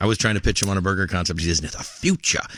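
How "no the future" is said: big, put-on, rich English accent. Retelling what a business partner said about chicken: imitating a big, rich English accent. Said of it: "He's got this big, rich English accent".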